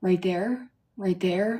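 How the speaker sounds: eager, encouraging, urging coach-like voice. Recalling Cody Brown during a televised birth: Cody Brown impression. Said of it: "you hear Cody Brown be like".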